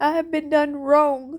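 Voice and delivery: grieving, emotional voice, pitched high. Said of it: "I'm sorry that I'm getting emotional".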